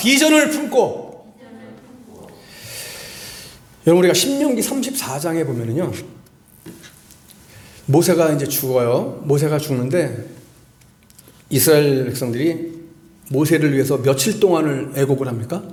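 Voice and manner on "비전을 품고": high-pitched, slow line. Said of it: "자, 한번 따라합시다".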